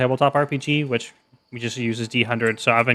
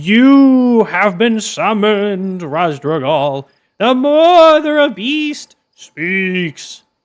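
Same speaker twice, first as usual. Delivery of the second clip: very slow, loud, stretched-out proclaiming voice; 9 semitones higher, 6 dB louder than usual. Reading a goblin summoning the player: drawn-out proclamation voice. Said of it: "drawing out his words like proclamations".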